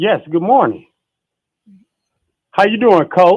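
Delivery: very loud, high-pitched shouting. Greeting the host, called coach, at the start of the program: shouting. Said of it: "I don't know why you yelling at me".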